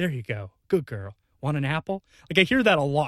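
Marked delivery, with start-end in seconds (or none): 0.0-2.0 soft, muttered, coaxing tone. Imitating a mechanic muttering under the car: imitating mechanic soothing a horse. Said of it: "Like he's talking to a horse".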